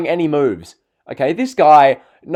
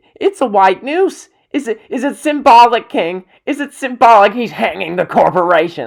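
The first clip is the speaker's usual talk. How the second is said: mock wrestling commentator, high, emphatic exclaiming announcer call; 5 semitones higher than usual. Retelling an Undertaker match at WrestleMania: imitating Michael Cole shouting. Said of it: "Michael Cole was shouting".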